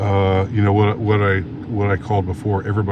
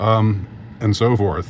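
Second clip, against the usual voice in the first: ordinary talk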